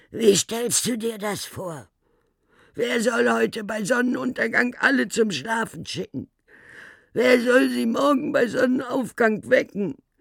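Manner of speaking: very high, hoarse, croaking rasp. Narrator voices Domesticus speaking after a long pause, Domesticus croaking. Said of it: "Dann krächzte er".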